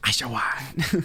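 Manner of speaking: put-on small creature cry voice. Doing an Oshawott impression for the others: Oshawott impression. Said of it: "I'll do my best Oshawott impression".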